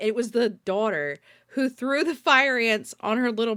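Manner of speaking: usual speaking voice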